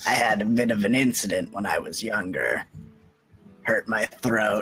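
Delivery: voice worn by decades of heavy smoking. Voicing a character explaining an old throat injury: sounds like a longtime smoker. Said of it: "Why do you sound like you've been smoking for twenty years".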